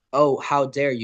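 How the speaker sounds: plain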